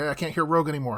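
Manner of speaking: plain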